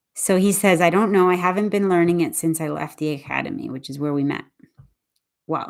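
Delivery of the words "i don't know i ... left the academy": normal talking voice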